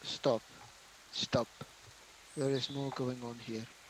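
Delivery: soft, quiet muttered aside under the breath. In character, telling a brother to stop: said under the breath. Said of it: "under my breath".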